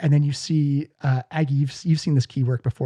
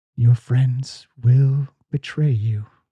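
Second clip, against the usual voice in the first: deep, echoing, reverberating voice. A game master voices something heard in a player's head, in a deep reverberating voice. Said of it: "a deep voice reverb in the back of your head".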